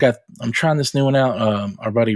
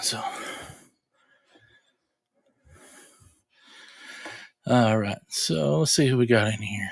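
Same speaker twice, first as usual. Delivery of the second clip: winded, out of breath, quieter; 6 dB quieter than usual. Back from running down to the garage, speaking to the guys, out of breath. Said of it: "I could catch my breath".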